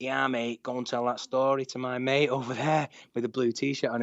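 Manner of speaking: put-on Manchester accent. Retelling what a man at a bar said: proper Manc accent. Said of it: "in a proper Manc accent".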